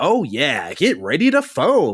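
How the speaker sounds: way over-the-top, peppy, swooping hype announcer voice. Describing a game tutorial's announcer, doing a peppy announcer impression. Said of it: "in this very peppy voice".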